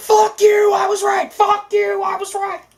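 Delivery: screaming at high pitch. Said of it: "spins around in his chair screaming".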